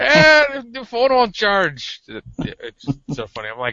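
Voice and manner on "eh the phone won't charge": put-on very high-pitched old Irish man's accent. Retelling a coworker's complaint about his phone: older Irishman's accent. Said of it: "an older Irishman's accent".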